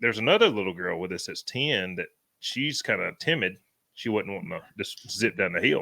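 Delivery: normal talking voice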